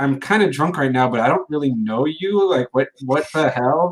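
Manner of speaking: ordinary delivery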